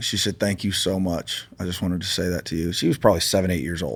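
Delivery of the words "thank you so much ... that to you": soft voice on the verge of tears. Retelling a little girl's thanks at an airport: imitating a girl almost crying. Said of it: "almost crying".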